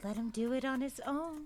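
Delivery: quiet half-whisper. Playing a character who half-whispers to a dog so another can't hear: half-whispering to the dog. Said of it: "And then I'll whisper to Moon".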